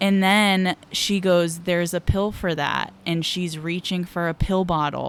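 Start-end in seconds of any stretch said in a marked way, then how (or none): none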